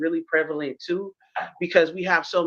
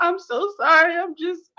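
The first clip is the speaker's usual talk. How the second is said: put-on very high, tearful sobbing voice; 12 semitones higher, 4 dB louder than usual. Describing how people come back after going off, imitating a crying apology. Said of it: "and then come back crying like".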